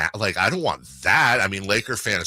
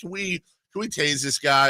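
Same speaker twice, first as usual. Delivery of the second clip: joking, ribbing tone, playful and pitched up; 6 semitones higher than usual. Retelling joking to the security guy: retelling playful heckling. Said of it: "I'm having fun with him".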